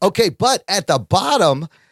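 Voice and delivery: ordinary talk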